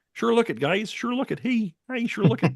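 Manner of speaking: high-pitched cartoon frog puppet voice. Quoting the other host's frog-like line back to him: Kermit the Frog voice. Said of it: "why does Justin sound like Kermit the Frog?".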